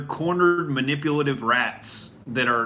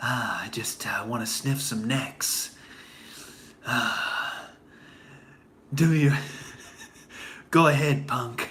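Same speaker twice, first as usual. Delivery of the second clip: slow, drawn-out, straining to sound tough; 2 semitones lower, 4 dB quieter than usual. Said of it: "trying desperately to be Clint Eastwood and failing".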